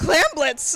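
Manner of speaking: caster voice cracking and breaking partway through. Introducing the next game to watch, voice cracking. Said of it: "My voice cracked".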